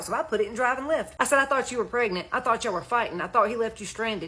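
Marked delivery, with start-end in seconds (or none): none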